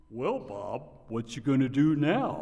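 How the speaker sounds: goofy cartoon moose voice with swooping pitch. Voicing a deer coming through his windshield, addressing him, in a Bullwinkle voice. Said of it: "trying to communicate to me through Bullwinkle's voice".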